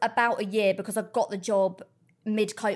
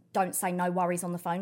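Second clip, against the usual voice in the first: plain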